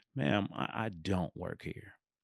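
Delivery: put-on disgusted tone. Retelling her answer to a woman asking where the men's shirt is, retelling a disgusted reply. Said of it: "I gave her a look of just pure disgust".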